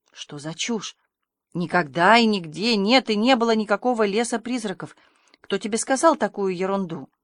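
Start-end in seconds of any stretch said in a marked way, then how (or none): none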